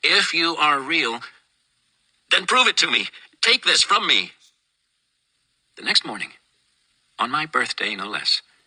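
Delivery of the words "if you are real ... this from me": loud, angry, higher-pitched outcry at full voice. Retelling praying on knees at night, imitating own loud angry voice. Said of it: "said in a loud and angry voice".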